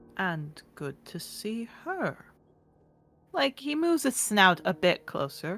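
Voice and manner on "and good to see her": hushed giant dragon voice, quieter. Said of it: "I have to whisper to not blow out your eardrums".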